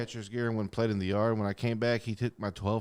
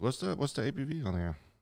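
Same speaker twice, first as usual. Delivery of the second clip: voice cracking, breaking mid-line; 3 semitones higher than usual. Sharing a bottle of stout with others, voice cracking. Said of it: "my voice cracked on that one".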